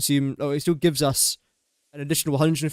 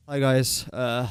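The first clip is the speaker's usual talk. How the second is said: mock depressed, fake gloomy voice; 2 semitones lower than usual. Showing how a video intro would sound if delivered depressed: mock depressed voice. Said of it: "I don't wanna sound depressed".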